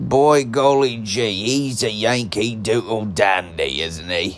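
bad, rotten, fake English accent. Talking about Americans being mocked by the British, speaker tries a bad English accent. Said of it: "I can't do an English accent these days".

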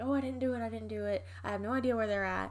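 mock pleading and begging. Retelling a man brought in for questioning: imitating his pleading and begging. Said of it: "he's like pleading and begging".

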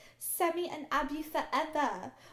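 put-on Australian accent. Retelling what Abigail said in the episode: imitating Abigail, Australian accent. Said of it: "I can't do an Australian accent either".

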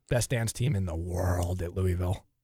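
low, eerie, unsettling creepy voice. Answering a question about a favorite venue, saying a line in a creepy voice. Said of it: "I said that creepily".

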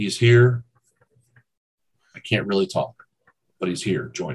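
brusque, curt, short-worded reply. Narrating a character who replies back to the players, curt. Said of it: "He replies back to you very curtly".

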